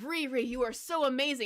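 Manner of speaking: plain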